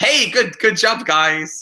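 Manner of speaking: put-on upbeat, sounds sarcastic. Showing how positive praise to the cast would come out: put-on positive praise that sounds sarcastic. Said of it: "I always sound like I'm being sarcastic".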